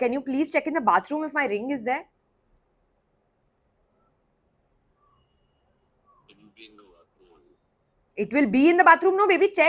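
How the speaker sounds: panicked, panicking delivery. Mid-episode, the speaker asks someone to check the bathroom for a ring: panicked. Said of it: "I'm panicking".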